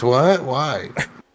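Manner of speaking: squeaky, high, little put-on voice. Imagining how they'd react: squeaky voice. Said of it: "Squeaky voice".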